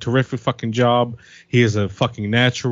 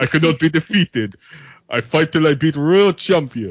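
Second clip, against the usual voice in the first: fake Russian accent, done with relish; 4 semitones higher than usual. Showing off an impression before doing his plugs, in a Russian accent. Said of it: "I could do a pretty good Russian accent".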